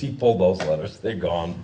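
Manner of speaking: ordinary talk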